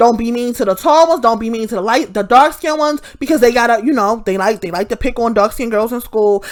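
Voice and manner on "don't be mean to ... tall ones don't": usual speaking voice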